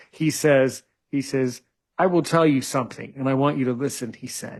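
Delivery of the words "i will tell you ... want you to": put-on stoic German accent. Retelling what a masseur told the speaker: imitating a stoic german voice. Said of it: "in this German way, this stoic German way".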